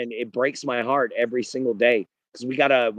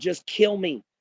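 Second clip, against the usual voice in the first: mock screaming, higher and slower; 7 semitones higher than usual. Describing wounded people, acting out one of them, imitating someone screaming. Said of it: "Or they're screaming".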